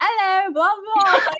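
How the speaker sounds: put-on loud, high British accent. Telling the other person how they sounded when they started talking, in attempted British accent. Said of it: "I'm trying to do a British accent".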